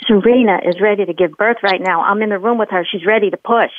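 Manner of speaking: normal talking voice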